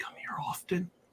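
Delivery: breathy, soft, leaning-in whisper. Voicing a character who leans over to a stranger: whispering a pickup line. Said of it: "lean over and whisper".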